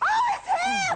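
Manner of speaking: high, loud excited shout.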